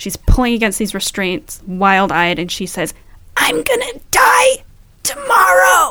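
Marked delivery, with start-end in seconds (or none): 3.4-5.9 croaky, creepy, very high and slow voice. Retelling what a restrained woman managed to say, imitating a croaky, creepy voice. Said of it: "in the croakiest, creepiest voice".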